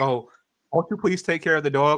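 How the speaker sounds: put-on mournful, earnest old charity-commercial voice. Mocking old commercials with a sad dog: imitating an old charity commercial plea. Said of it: "those old school commercials had".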